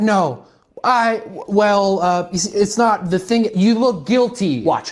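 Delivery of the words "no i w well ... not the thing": slow, hesitant, stumbling, rambling, flustered stammer. Showing how a rambling denial sounds to someone who talks too much: imitating a rambling denial. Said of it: "If you go".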